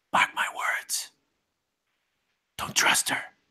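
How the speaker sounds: breathy whisper, close up. Narrating as the Baroness leans in close to your ear: whispering. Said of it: "as she whispers".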